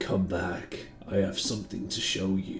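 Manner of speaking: eerie, creepy, breathy whisper. Voicing a mysterious voice heard in the players' heads: creepy disembodied voice. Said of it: "Oh, that's not creepy at all".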